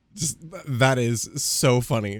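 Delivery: plain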